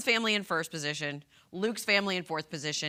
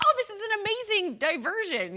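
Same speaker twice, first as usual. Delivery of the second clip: very high, giggling, gushing schoolgirl voice. Retelling how a contestant reacted, imitating Bailey giggling like a schoolgirl. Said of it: "giggling like a schoolgirl when she's like".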